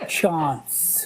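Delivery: "chance" pronounced French style, breathy, half-whispered. Answering a question about how to say chance: French accent. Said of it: "would you say it more like a Frenchman".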